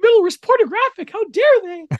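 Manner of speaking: pitch goes way up into a squeak. Quoting an outraged remark in a Minnie Mouse voice. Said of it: "Are you doing Minnie Mouse there?".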